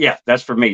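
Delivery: ordinary talk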